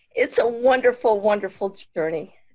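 voice catching, choked up, on the verge of tears. Asked to share something that might help others in recovery, choking up. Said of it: "I'm gonna cry".

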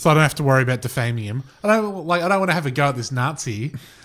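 ordinary talk, nothing marked

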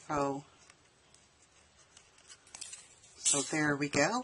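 muffled speech. Gluing a craft with the glue cap held in mouth, muffled. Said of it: "I have the cap in my mouth. That's why I sound so funny".

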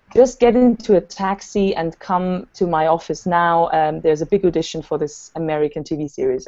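ordinary talk, nothing marked

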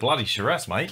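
put-on Australian accent. Joking about the name of a drink: put-on australian accent. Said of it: "if you're Australian and you're offended".

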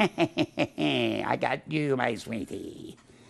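slow, creaky, drawn-out villain sneer. Describing what the Pharisees did not look like, in a Snidely Whiplash villain voice. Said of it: "twitching their mustache going".

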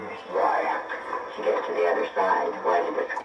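low, whispered, evil-sounding voice. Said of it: "Why do you sound so evil?".

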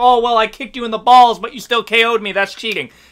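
ordinary talk, nothing marked

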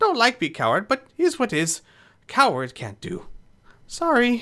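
very high, squeaky goblin voice, swooping and nervous. Asked to sneak in and open the doors, the goblin answers in a squeaky goblin voice. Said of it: "a small goblin. ... You begin to hear a small, squeaky, high-pitched voice coming kind of towards you from under this dock".

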